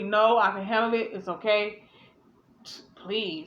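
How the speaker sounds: slow, sassy answer full of attitude. Retelling how she answered the others: imitating someone with attitude. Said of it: "basically with an attitude".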